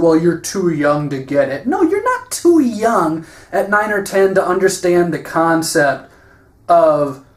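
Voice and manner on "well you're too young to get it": ordinary talk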